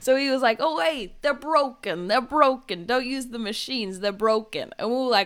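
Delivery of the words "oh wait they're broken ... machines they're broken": fake, put-on New York accent. Retelling what a man at the ticket station said, in a put-on New York accent. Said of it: "excuse my accent, but I'm trying to put on a New York accent".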